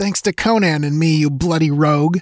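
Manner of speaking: contemptuous sneer shaking with rage. Valeria, under physical coercion, retorts, sneering and trembling with fury. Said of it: "sneered Valeria, trembling with fury".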